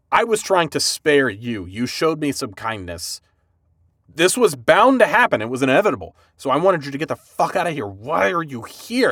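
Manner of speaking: fed-up, frustrated ranting tone. Retelling a scene, voicing Thorfinn scolding someone who stayed: frustrated Thorfinn voice. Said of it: "you see this, like, frustration in him".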